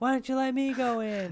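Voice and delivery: acted-out high, angry yelling and carrying on. Retelling a man at an animal sanctuary complaining: imitating a man yelling. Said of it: "yelling and carrying on".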